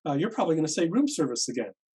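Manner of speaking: cheery, upbeat, sing-song voice. Retelling what the mail recipient said days later: imitating a cheerful reply. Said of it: "cheerful with a smile on her face".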